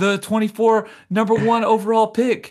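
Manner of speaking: dreamy, high, loud, gushing storybook wonder.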